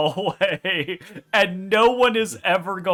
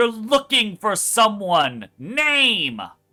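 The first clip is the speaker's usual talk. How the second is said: thin, reedy, near-squeaky voice, one word drawn out; 3 semitones higher than usual. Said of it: "in a very reedy, almost squeaky voice".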